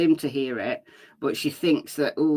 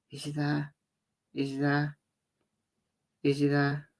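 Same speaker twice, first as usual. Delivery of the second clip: quiet, throaty near-whisper; 6 dB quieter than usual. Showing how the question was whispered, whispering with some throat. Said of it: "whispering, but with a little bit of throat".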